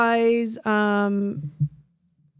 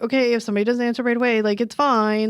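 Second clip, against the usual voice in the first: normal talking voice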